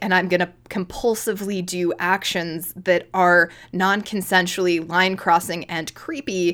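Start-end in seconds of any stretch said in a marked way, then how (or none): none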